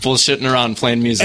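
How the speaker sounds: ordinary delivery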